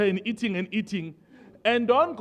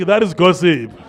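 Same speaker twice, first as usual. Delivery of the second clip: raised voice, lower and louder; 4 semitones lower, 8 dB louder than usual. Leading the congregation to repeat a line: louder. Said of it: "A bit louder".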